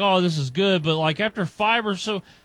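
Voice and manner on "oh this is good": ordinary talk, nothing marked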